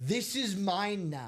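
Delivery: high-pitched, put-on old woman screaming. Retelling how an old woman at the game refused to give back the bat: imitating an old woman screaming. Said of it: "And she's screaming".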